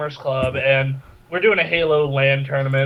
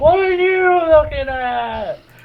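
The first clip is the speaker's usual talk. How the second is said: play-acted very high street holler, slowed and drawn out; 12 semitones higher, 4 dB louder than usual. Retelling how a bum yelled at the group: imitating a bum yelling. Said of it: "just yelling at us".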